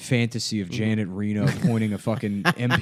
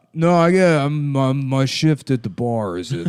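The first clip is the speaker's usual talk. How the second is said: put-on Brooklyn bar worker voice, higher and louder; 4 semitones higher, 5 dB louder than usual. Playing a Brooklyn bar back guy for the others: put-on Brooklyn bar back character. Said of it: "Good impression, man".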